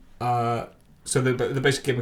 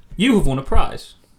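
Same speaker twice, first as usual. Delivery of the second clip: loud, high sarcastic delivery. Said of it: "It says sarcastically".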